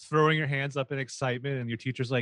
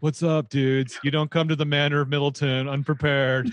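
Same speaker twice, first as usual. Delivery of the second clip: mock dumb American dude voice, louder; 5 dB louder than usual. Imagining a character as a stupid American: put-on stupid American voice. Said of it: "stupid American who's just like".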